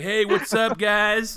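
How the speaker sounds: drawn out slowly, pitched slightly high. Retelling a comic scene where The Dude comes through a portal: The Dude voice. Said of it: "the dude comes through the portal being like".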